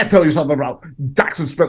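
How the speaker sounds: sports draft analyst voice. Reacting to a draft ranking of Jackson Smith, in a Mel Kiper impression. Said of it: "That's my Mel Kiper".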